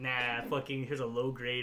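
plain

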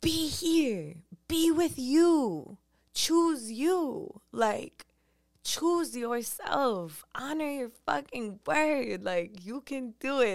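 mock fierce, forceful, high shouting, "you" stretched long. Retelling yelling affirmations in the mountains: imitating own aggressive yelling. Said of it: "I was just yelling".

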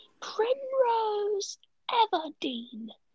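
put-on very high, rude, angry girl voice. Showing off impressions, the speaker does the girl from Hunger Games. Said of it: "I can do the girl from Hunger Games".

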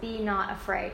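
ordinary delivery

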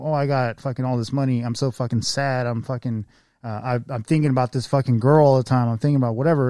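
ordinary talk, nothing marked

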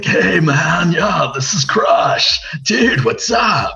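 very slow, laid-back surfer voice, every word stretched. Recalling the voices once done to entertain people: Crush voice. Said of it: "I'd be doing voices like".

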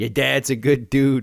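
put-on classic New York accent. Retelling what a guy waiting to cross the street said, in a classic New York accent. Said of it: "like the classic New York accent".

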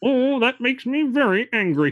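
very high-pitched cartoon alien voice. Asked to try it again, the speaker redoes a Marvin the Martian impression. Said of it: "Can you try that one again?".

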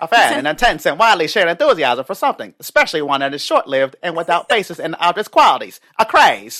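booming 1930s newsreel-style voice. Reading a dictionary definition aloud to the other speaker, in a 1930s voice. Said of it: "in your 1930s voice".

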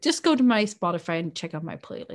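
mock, smug, overly proud, boastful tone. Retelling telling their sister to check their playlist: imitating own overly proud tone. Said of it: "me being overly proud of my playlist".

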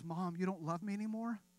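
put-on tearful, hurt voice. Retelling a son's reply after his first spanking: imitating Ross in tears. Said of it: "turned around with tears in his eyes and says".

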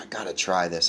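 ordinary talk

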